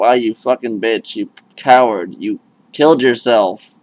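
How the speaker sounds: ordinary delivery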